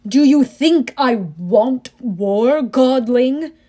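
roaring, thunderous, booming bellow. Narrator reading Hades questioning the narrator amid skeletal warriors, Hades bellowing. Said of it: "Hades bellowed".

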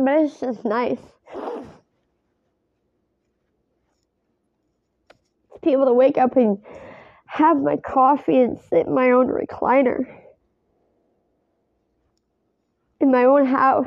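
emotional, fighting off crying. Talking about sitting in own recliner at home, holding back tears. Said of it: "I'm trying really hard not to cry right now".

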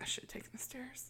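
soft, high whisper. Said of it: "is like, whisper".

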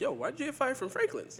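high-pitched, suspicious, probing tone.

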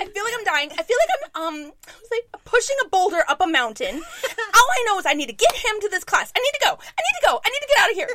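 acted-out freaked-out yell. Retelling yelling at their dad and stepmom in front of their kids, retelling a panicked yell. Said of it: "I'm like yelling and I'm freaking out".

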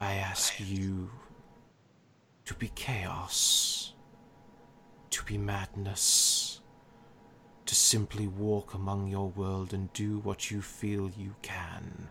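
echoing voice, as if from many mouths at once. A being answers a mortal asking what it wants, echoing from many mouths. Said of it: "we are merely the [name]. / As he says that, / To be my hand in your world. / You see, as he's speaking, that voice seems to appear just everywhere, and it's almost like different mouths are saying it".

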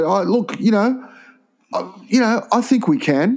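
hesitant, unconfident bogan ramble. Retelling what Foran said about the game: imitating Foran sounding unconfident. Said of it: "He didn't sound very confident".

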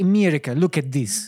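slow, drawn-out, put-on Russian accent. Acting out Russians addressing America: mock Russian accent. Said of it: "Without the, the racist accent".

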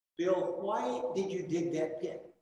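put-on soft, composed, calm but firm tone. Retelling what a feared teacher asked: imitating a calm but firm voice. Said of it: "in a really calm but firm voice".

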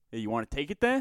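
imitated New York accent. Going through slang phrases, saying one the way it sounds: New York accent. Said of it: "this one just sounds super New York".

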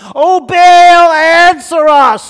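very loud, slow, high, drawn-out shout. Worshippers call on their god from morning until noon, shouted. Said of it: "they shouted".

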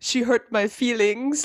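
slow, clumsy fake German accent. Recapping a challenge episode, quoting a contestant about his partner, Nam's bad German accent. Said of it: "I don't have a good German accent".

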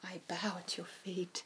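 strange, whispered, hushed, reverent put-on voice. Explaining reverence to a host, acting out the words in a weird voice. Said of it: "In that weird voice".

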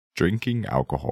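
attempted famous narrator-style voice. Asked for a best Morgan Freeman, trying a line: Morgan Freeman voice. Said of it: "your best Morgan Freeman right now".

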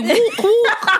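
high-pitched mocking voice, laughing.

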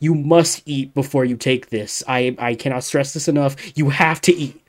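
mock-insistent emphatic voice. Retelling how she was handed a medicine, with a mock-insistent warning. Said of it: "slams it on the desk".

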